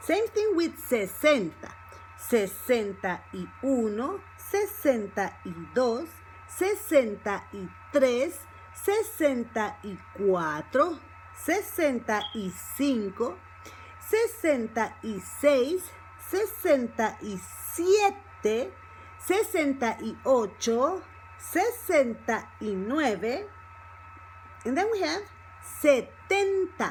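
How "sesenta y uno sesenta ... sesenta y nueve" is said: slow, careful delivery. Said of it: "so that's slow again".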